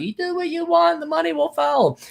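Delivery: mocking, high-pitched voice.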